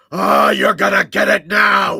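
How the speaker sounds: very loud, rough, bellowing battle roar. A tabletop player acts out his character's line after a drink: roaring. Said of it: "I just roar and go".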